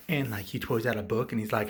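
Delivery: ordinary talk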